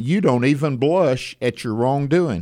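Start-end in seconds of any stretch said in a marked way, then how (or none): none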